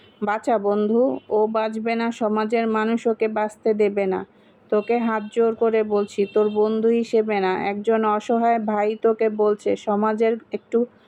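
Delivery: ordinary delivery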